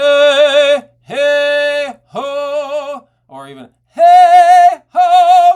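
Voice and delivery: put-on very high, loud old-school Broadway belt. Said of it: "your old school Broadway".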